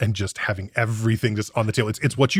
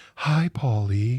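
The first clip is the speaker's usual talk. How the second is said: put-on sultry female robot voice. Describing a reprogrammed robot to Nick, imitating a sultry female robot voice. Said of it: "sort of sultry female voice".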